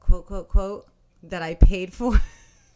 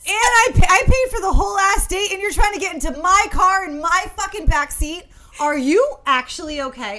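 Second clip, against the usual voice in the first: very high-pitched, loud screaming; 11 semitones higher, 6 dB louder than usual. Speaker rants about paying for a whole date: screaming. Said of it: "I'm screaming".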